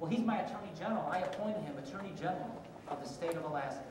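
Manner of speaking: plain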